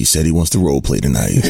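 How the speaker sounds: put-on deep-voiced late-night radio DJ voice. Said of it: "Deep Voice Danny".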